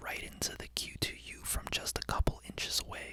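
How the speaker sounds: hushed whisper, right at the mic. Comparing microphones, whispering into the Q2U from a couple of inches: whispering. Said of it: "right now I'm whispering".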